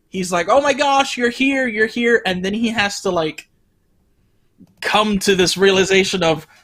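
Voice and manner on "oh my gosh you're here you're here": thrilled, overjoyed, high excited voice. Retelling a film scene where Arlo is really excited: imitating excited Arlo. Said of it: "Arlo's really excited".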